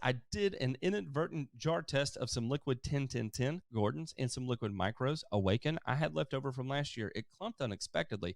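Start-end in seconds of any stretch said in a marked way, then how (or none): none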